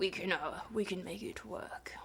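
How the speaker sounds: gruff, grouchy posh English accent with a growl. Trying out the voice for Socrates: grouchy received pronunciation with growl. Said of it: "grouchy English high received pronunciation with a bit of a growl".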